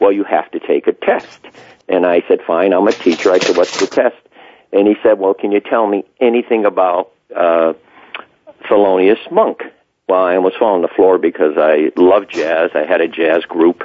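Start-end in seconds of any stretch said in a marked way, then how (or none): none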